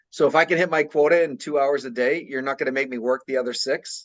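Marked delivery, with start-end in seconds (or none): none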